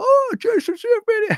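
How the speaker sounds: very high, loud, far-carrying shout. Retelling how Clay shouted across the room: imitating a shout across the room. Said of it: "he just shouts".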